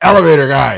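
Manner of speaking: really gruff, very loud bark. Retelling an elevator guy answering the door buzzer, gruff elevator guy voice. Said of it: "like really gruff".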